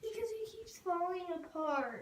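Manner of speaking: sobbing words through tears, fast and tearful. Answering why, crying while talking. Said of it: "Why are you crying?".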